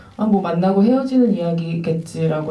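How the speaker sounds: ordinary talk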